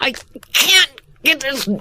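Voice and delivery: words pushed out with strain. Showing how an actor holding a real jar voices the effort: straining while twisting a jar. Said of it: "twist it and go".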